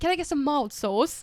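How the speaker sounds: put-on British accent. Retelling how he ordered at the drive-thru: put-on british accent. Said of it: "talk in a British accent".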